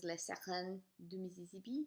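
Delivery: put-on French accent and pronunciation. Starting a Truffaut film review, giving the French title in a French accent. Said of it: "if you like my French accent".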